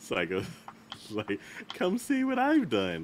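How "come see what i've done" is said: put-on innocent voice, much higher and louder. Acting out a psycho's line: mock-innocent voice. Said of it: "in an innocent voice".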